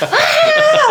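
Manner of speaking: very high, excited, laughing yelp.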